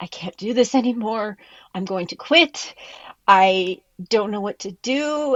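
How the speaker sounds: drawn-out ugly sobbing, breaking down in tears. Retelling breaking down after a booking mistake: retelling own ugly crying. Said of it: "started ugly crying and saying".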